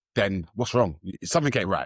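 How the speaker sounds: ordinary talk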